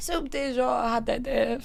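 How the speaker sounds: put-on French accent. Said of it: "The fake French is cracking me up".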